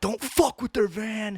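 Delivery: very high, shrieking scream. Retelling how someone screamed at kids rocking a van: imitating Critter screaming. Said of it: "just started screaming at everybody".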